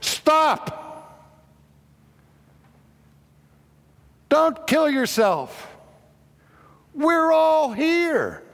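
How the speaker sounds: very high, very slow, swooping loud cry. Telling how the Apostle Paul stops a man about to stab himself, crying out loudly. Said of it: "crying in a loud voice".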